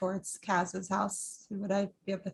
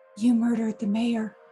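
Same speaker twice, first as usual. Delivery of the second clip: hushed whisper in put-on voice; 3 semitones higher, 8 dB louder than usual. Voicing a character accusing a man of murder: whispering in character. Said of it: "I just whisper again".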